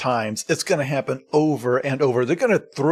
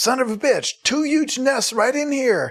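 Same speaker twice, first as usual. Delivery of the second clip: acted-out shrill, very high shrieking scream; 11 semitones higher than usual. Retelling Trapper calling Willie in after finding the nests: retelling a scream.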